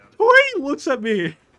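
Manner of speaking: talking through hard laughter. Filming dad up close and reacting to his look: laughing hard while talking. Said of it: "I don't know why I'm laughing this bad".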